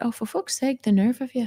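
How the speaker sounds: condescending, fed-up scolding, Irish mother voice. Recounting yelling at something, the speaker mock-shouts in the voice of an Irish mother. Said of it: "channeled the voice of my Irish mother".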